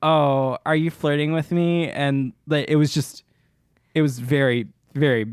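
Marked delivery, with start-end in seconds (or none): 0.0-1.9 mock flirtatious tone. Retelling how Lily flirted with a straight guy: imitating Lily flirting. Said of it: "Lily was like".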